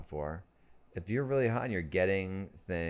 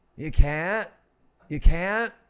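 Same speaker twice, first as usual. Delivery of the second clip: mock oddly hopeful Broadway-style voice, higher and louder; 10 semitones higher, 10 dB louder than usual. Mimicking the other speaker's question back: imitating with weird hope. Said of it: "you put, like, weird hope in my voice".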